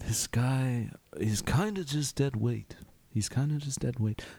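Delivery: whispering aside. Pulling two companions aside to talk about a prisoner: whispering aside. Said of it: "I just whisper".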